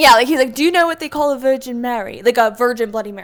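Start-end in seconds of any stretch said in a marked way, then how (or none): 0.5-2.2 put-on British accent. Retelling what the man with the beverage cart asked: imitating a British accent. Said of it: "I'm gonna mess up my accent".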